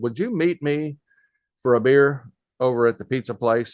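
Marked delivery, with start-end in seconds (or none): none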